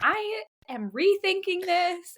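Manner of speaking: put-on high, slow, scared little-kid voice.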